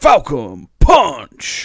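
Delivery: very loud battle cry bellowed with big pitch swoops. Answering a request for a Captain Falcon impression: Captain Falcon voice. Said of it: "your best, uh, Captain Falcon impressions".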